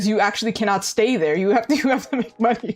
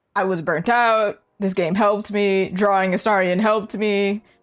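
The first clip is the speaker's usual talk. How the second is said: normal talking voice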